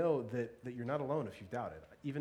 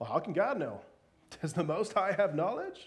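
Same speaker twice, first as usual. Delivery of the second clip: louder, mocking scoff. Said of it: "kind of mockingly".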